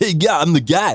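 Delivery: smooth, groovy put-on disco-club voice. Showing how the article writer should sound: disco-y put-on voice. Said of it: "kind of like a disco-y".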